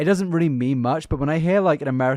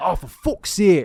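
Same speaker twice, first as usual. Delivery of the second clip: put-on northern English voice, higher; 4 semitones higher than usual. Explaining who says a swear phrase, imitating a northern English person. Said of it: "a northern person would be like".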